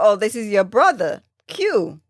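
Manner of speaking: ordinary talk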